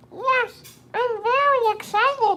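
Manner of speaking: very high, squeaky voice. Answering whether Baby Yoda is excited: Baby Yoda voice. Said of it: "That's not what he sounds like".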